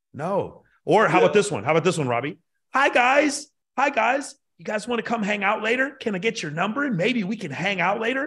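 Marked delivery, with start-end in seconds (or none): 2.7-8.2 nervous, pitched-up chatter with rising inflection. Trying out a different bit for Robbie, acting nervous, voice rising. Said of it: "the inflection of my voice goes up because I'm real nervous".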